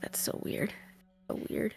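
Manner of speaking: mocking mutter, whispered under the breath. Voicing Olivia as she hugs Adriel, mocking her, muttered under breath. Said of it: "mockery under her breath is like".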